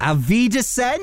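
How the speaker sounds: very high-pitched, best-effort put-on German accent. Signing off the segment, the host says goodbye in his best german accent. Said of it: "in my best accent".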